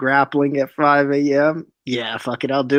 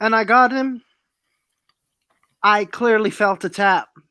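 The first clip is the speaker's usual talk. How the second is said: slow, higher-pitched put-on Dutch accent; 7 semitones higher than usual. Quoting a fighter's claim about the fight: Dutch accent. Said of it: "Is that your Dutch accent?".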